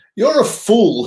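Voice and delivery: very high, mocking sneer. A captain interrogating an arrested man about his dream, sneering. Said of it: "he sneered".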